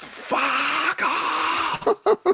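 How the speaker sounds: shrill, very high scream of a whole crowd. Retelling how a huge festival crowd reacted: imitating a crowd screaming. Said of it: "sixty thousand people screamed".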